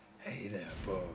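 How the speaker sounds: put-on husky voice. The speaker greets the boys in a husky voice. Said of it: "I need to work on my husky voice".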